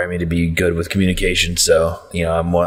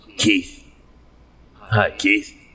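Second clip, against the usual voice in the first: sudden, commanding, authoritative, in-charge voice; 2 semitones higher than usual. Finally greeting Keith after stumbling over his name, authoritative tone. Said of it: "you got very authoritative all of a sudden".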